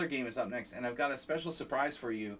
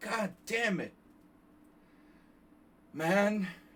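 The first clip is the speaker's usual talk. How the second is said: loud, angry, slow delivery; 9 semitones higher, 5 dB louder than usual. Retelling how you cursed without the instinct to do it in Hungarian, imitating angry Joe Biden. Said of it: "I went into total Joe, angry Joe Biden mode".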